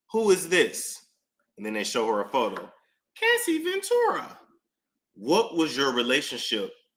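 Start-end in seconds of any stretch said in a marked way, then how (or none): 3.1-4.3 bad, very high-pitched young woman voice.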